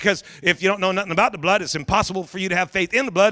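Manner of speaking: fast, rushed, quick first run-through.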